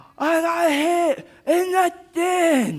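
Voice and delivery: very high, stretched-out, drawn-out holler. Recounting getting hit in the chin, retelling own yell. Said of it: "And I yelled and I said".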